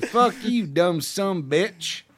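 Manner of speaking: slow, high Southern drawl. Saying a rude line in a generic southern accent. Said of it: "that's what I sound like when I do my Southern accent".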